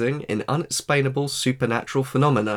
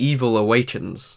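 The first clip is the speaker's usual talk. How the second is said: ordinary talk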